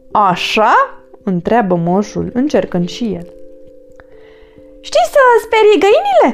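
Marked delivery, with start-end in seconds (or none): 4.8-6.3 very high, screeching shriek. Narrator reads a character challenging the old man, shrieking. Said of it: "Țipă Findus".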